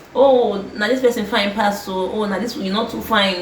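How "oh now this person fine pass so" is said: usual speaking voice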